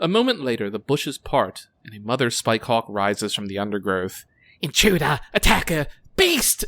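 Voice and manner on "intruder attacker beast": high, alarmed shrieking creature screams. A narrator voices a mother spikehawk rising from the bushes at intruders, screaming. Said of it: "She screams".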